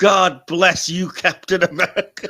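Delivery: very loud, corny, cheesy, booming, drawn-out delivery. Quoting a favourite film moment: imitating Bernie's cheesy delivery. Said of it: "my favorite cheesy delivery in the film".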